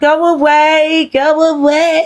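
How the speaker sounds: put-on very slow, drawn-out Birmingham accent. Describing a woman who has started to have a man's accent, imitating Angie's Brummie accent. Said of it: "She's started to have his accent".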